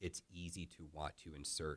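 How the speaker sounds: ordinary talk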